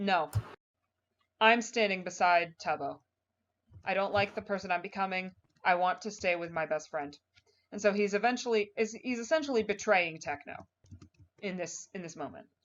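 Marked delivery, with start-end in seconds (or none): none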